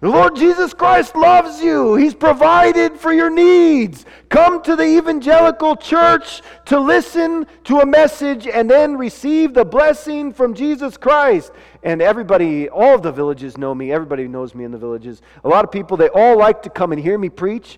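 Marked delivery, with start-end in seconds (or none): 0.0-11.5 put-on wild preacher-style yell, very high. Retelling arriving in villages by boat with food: imitating screaming like a madman. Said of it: "started screaming like a madman".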